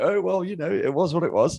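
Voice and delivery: mock lukewarm, unbothered, dry British understatement. Teasing the other speaker about muted praise: mock understated british tone. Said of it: "You shouldn't sound so British about it".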